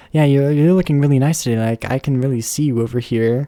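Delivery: ordinary talk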